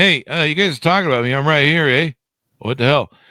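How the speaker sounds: play-acted complaining, griping, protesting tone. Imitating Mary objecting to being talked about: imitating Mary complaining. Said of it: "over there going".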